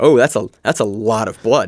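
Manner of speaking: normal talking voice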